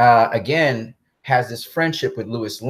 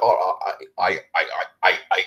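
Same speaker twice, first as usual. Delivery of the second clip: mock, put-on stuttering; 4 semitones lower than usual. Describing a film scene where a hero breaks down, acting out a stutter. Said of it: "He stutters".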